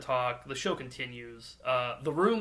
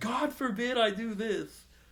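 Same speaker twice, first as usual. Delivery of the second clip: mock, very high, shrill yelling; 10 semitones higher than usual. Retelling a man yelling outside at night, imitating someone yelling. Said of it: "he's just like yelling".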